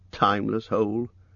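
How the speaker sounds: ordinary delivery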